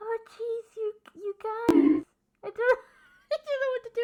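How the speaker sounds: near tears, stumbling, choked up, high and slow. Thanking chat after someone gifts a sub: getting emotional, near tears. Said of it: "I'm actually getting really emotional".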